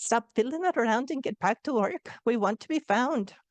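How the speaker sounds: awful, clumsy put-on Irish brogue. Retelling a dream, the speaker quotes two ancestors who shook them awake: awful Irish accent. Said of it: "apologize for my awful Irish accent".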